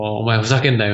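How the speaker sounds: ordinary talk, nothing marked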